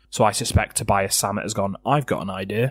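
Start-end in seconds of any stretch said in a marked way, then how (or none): none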